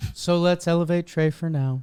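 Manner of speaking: soothing, calm, high yoga instructor voice. A co-host introducing a baseball segment switches into a yoga instructor voice. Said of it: "going into my yoga voice".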